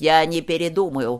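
growled loudly, snarling. Narrator reads a character's retort in an argument, loud growl. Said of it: "громко прорычал Гейб".

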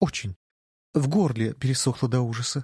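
plain

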